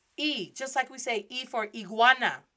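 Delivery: ordinary delivery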